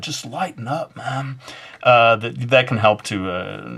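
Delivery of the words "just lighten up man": soft surfer dude voice. Mid-tutorial, the speaker slips back into a surfer guy voice. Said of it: "your voice du jour today, the surfer guy".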